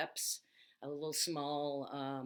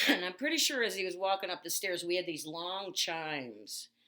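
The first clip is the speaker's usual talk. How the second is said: usual speaking voice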